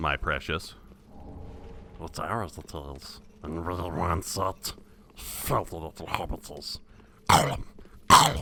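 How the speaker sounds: slow creature voice, every word drawn out. Showing off a character impression people used to admire: Gollum voice. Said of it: "my Gollum impression".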